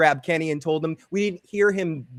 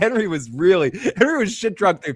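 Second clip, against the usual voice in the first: ordinary delivery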